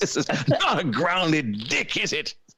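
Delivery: slow, attempted, put-on British accent. Trying out an accent in a conversation; put-on British accent. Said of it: "That sounds a little more British".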